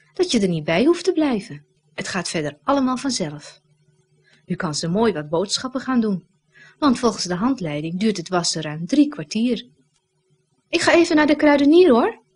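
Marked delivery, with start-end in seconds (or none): 10.7-12.1 crowing, triumphant, high and loud. Narrator reads Barbara calling to Bas in his garden, triumphantly. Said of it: "zegt ze triomfantelijk".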